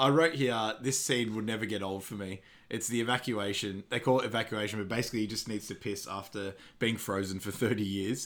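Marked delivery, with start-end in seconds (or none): none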